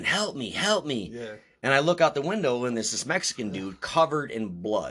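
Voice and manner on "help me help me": drawn-out screaming cry. Retelling how a bloodied man at the window screamed: retelling a scream for help. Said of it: "he's screaming".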